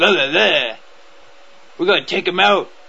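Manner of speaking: tough action movie hero voice. Showing how the actor talks when playing an American in Red Dawn, in a Chris Hemsworth action movie voice. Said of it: "he talks in like this action movie voice".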